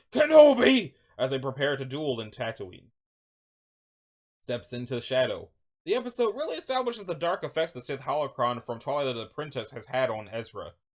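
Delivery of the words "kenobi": high-pitched, loud shriek. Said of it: "Maul shrieking".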